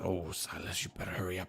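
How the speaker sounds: soft, mumbled mutter under the breath. A player voices their character keeping a distance from a creature, muttered under breath. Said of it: "just kind of mutter under my breath".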